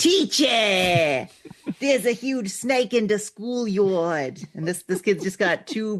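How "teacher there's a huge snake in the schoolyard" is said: put-on slow, unexpected Brooklyn accent. Imagining a child in a nineties dub telling the teacher about a snake, in an inexplicable Brooklyn accent. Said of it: "inexplicable Brooklyn accent".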